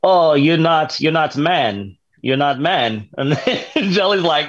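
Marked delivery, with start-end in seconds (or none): 0.0-2.0 put-on heavy broken Eastern European accent, much higher pitch. Speaker retelling what a customer said about her instructor, broken eastern european accent. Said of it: "very broken Eastern European accent".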